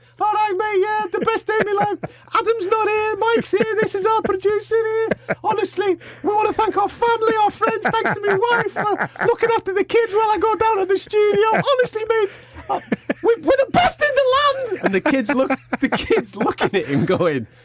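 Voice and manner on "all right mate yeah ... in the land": put-on very high-pitched, tipsy, rambling drunk gush. Retelling a drunk winner's backstage interview, imitating drunk Nick. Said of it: "He's like going".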